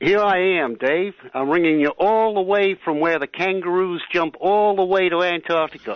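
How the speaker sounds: put-on American accent. Answering the other speaker's request to hear it, doing an american accent. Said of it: "you'd like to do an American accent, so here it is".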